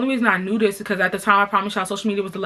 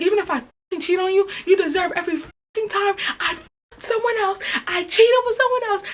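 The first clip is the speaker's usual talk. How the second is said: acted, high-pitched yelling; 11 semitones higher than usual. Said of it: "I was just yelling".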